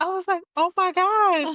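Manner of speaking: panicked, high-pitched exclamation.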